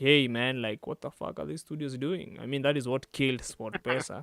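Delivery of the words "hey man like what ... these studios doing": ordinary talk, nothing marked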